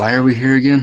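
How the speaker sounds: whispering. Speaking in character to another player in a game scene: whispering. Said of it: "I whisper to you".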